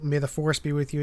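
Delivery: ordinary talk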